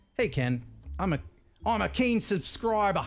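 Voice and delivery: put-on speaking with an Australian accent. Reading out a letter someone wrote him, in an australian accent. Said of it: "That's my Australian accent".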